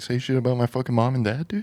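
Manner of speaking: muttering under breath. Retelling what he said to himself back then, muttered under his breath. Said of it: "I was fucking talking under my breath".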